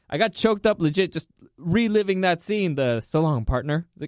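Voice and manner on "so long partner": normal talking voice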